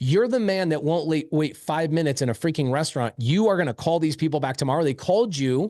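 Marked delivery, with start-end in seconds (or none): none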